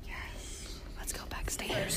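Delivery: slow, soft whisper.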